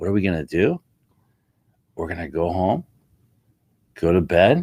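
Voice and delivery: unfazed, plain-spoken, deadpan voice. Telling how one guy answered another who tried to panic him, retelling a deadpan reply. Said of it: "the guy just deadpan".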